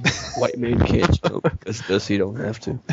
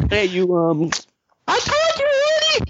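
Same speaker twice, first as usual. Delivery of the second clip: bad Latin American woman's accent, yelled very high. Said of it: "I can't do a good Latin woman voice".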